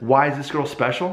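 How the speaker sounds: normal talking voice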